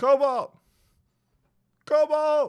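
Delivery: very loud, high yelling. A storyteller voices a familiar voice calling to a player's character, calling out a name. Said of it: "you hear a very familiar voice be like".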